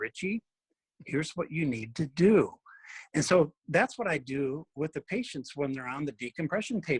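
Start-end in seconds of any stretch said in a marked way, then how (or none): 0.0-2.5 quiet, soft, lowered voice. Speaker quotes how his doctor gives him important advice, imitating a lowered voice. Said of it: "he lowers his voice".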